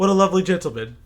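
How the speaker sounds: sudden shift to grave, earnest, very serious tone. Recapping a character's reply about another character; retelling a very serious tone. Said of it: "her tone goes from like that oh blase to very serious".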